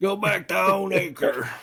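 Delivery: high, slow, mock yelling dad voice.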